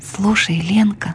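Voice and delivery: hushed, quiet whispered voice. Reading Alyoshka suddenly turning to Lenka in class: whispering. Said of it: "вдруг неожиданно прошептал он".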